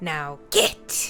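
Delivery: hissing voice. Game narrator voices her sending the players away: hissing voice. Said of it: "in her hissing voice".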